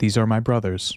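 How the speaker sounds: ordinary talk, nothing marked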